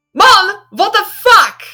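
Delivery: shocked half-shout. A narrator voices Clara's first reaction to what she sees, kind of shouting. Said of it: "She kind of shouts".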